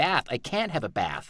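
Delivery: bath and can't pronounced with American accent. Recalling going back to england and mispronouncing words, in an american accent. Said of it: "I couldn't say bath or can't".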